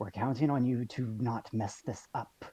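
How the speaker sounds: hushed, whispering voice. Voicing a character at the back, warning the others: whispering. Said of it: "just whispers".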